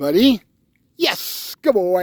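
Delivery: punchy, emphatic delivery with heavy stress. Giving a dog a yes marker without moving: strongly accented praise tone. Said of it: "I just used my voice tone and a lot of, uh, accent on the voice tone".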